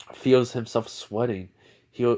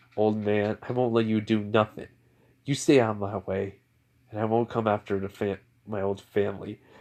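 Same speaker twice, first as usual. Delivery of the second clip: plain reading voice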